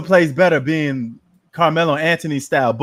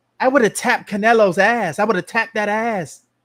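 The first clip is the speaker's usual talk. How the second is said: pitched up, zesty and boastful; 5 semitones higher than usual. Imitating how someone talks in other videos: imitating Oscar De La Hoya's zesty voice. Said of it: "when he being even more zesty".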